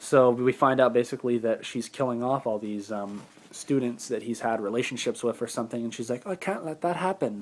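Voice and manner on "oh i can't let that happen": put-on homemade British English accent, pitched up. Recapping a plot, voicing the killer's line in an imitated british accent. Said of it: "There's my take on a British accent".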